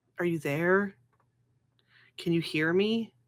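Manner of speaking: muttering under the breath. Voicing a character calling to her father in prayer: muttering under her breath. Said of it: "she'd just be muttering under her breath".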